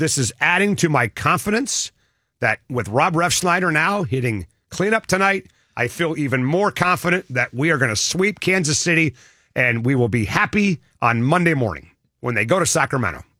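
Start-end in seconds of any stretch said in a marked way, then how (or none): none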